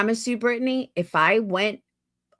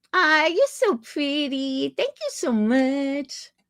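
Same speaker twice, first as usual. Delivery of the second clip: put-on childish, high, slow baby-talk voice; 5 semitones higher than usual. Demonstrating the baby voice she does when imitating someone. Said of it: "I do do that baby voice".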